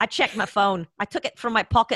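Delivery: attempted Irish accent that drifts into Scottish. Reading the book aloud after a listener's request, the speaker tries an attempted Irish accent. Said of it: "No, that's Scottish, isn't it?".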